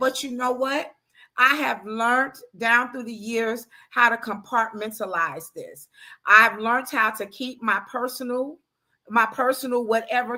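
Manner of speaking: plain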